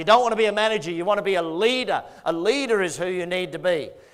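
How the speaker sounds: ordinary delivery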